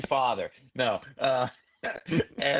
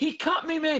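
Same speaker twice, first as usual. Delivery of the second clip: put-on play-acted drunken yelling, very high pitch; 13 semitones higher than usual. Telling a story about a drunk man at a show, retelling a scream. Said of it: "the guy screaming".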